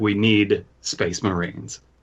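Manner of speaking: bad, slow, drawn-out, sassy, thick-tongued voice. Retelling what Donald Trump would say: Donald Trump impression. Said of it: "So Donald Trump is like".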